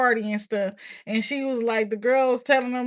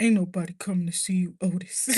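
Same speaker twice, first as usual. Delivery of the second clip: put-on low, grumpy man's voice; 5 semitones lower than usual. Showing how he sounds when he tries to talk like a man: grumpy man voice. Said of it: "sound like a grumpy guy".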